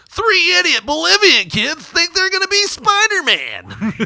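very high, swooping tabloid news anchor voice. Speaker mimics how the show covered the story, in the TMZ voice. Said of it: "They do the TMZ voice".

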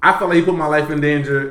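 plain

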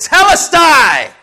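huge, very loud, very high-pitched outcry. Retelling the cross scene in a sermon: imitating a loud cry. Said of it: "he cried with a loud voice like".

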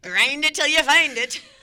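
very high, loud, belted Irish leprechaun voice. Retelling how a man used to say his phrase, in a Lucky Charms leprechaun voice. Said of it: "exactly like that".

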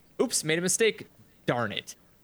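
weird emphasis on odd words, misplaced stresses. Describing how a woman talks to her coworkers, imitating her weird emphasis. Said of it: "weird emphasis".

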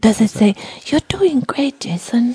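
whispered voice. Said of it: "when you whisper".

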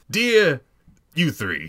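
high, swooping put-on character voice. Reading a letter aloud, in a put-on character voice. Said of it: "This way I get to do his voice".

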